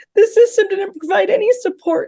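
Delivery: getting very upset. Speaking about their mom who worked so hard, admitting they're getting very upset. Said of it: "I'm getting very upset".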